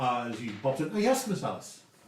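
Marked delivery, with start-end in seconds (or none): 0.9-1.8 put-on Scottish accent, pitched higher. Voicing Nemo as he pops in, greeting Miss Alice: higher Scottish accent. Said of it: "A higher voice".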